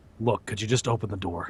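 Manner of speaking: low soft voice. Retelling what he said to a speechless man, in a lowered voice. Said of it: "I take a deep breath and I lower my voice".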